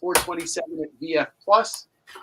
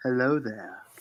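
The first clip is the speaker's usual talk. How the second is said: hushed, quiet half-whisper, close up in the ear; 5 semitones lower, 3 dB quieter than usual. Joking about what will happen next, half-whispering as Obi-Wan. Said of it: "Obi-Wan is quietly gonna whisper in your ear".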